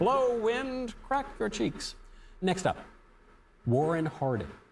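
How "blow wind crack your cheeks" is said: shrill, slow, drawn-out high screaming rant. Comparing a president to Lear, quoting him: imitating Lear screaming and yelling. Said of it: "he's just screaming and yelling".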